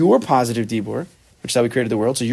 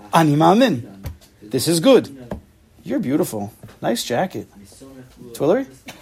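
fake, swooping sarcastic tone throughout. Listing positive words as examples, joking: putting on sarcasm. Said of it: "but you're sarcastic".

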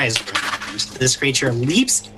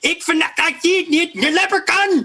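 very high, very slow, drawn-out creature war cry. The narrator voices a small hairy creature leaping from a stone: leprechaun's battle cry. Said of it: "And you hear this cry".

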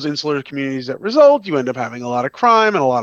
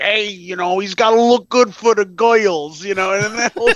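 strong put-on New York accent, pitched up; 6 semitones higher than usual. Describing characters who sound so new york, in a put-on new york accent. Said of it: "they sound so New York. They're like".

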